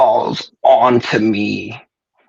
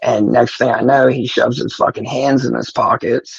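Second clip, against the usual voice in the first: ordinary talk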